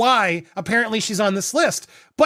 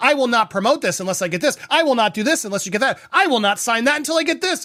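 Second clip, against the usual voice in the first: demanding, threatening, unbending delivery; 2 semitones higher than usual. Imitating Blake Lively making threatening demands, imitating Blake Lively making threats. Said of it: "You threatened him".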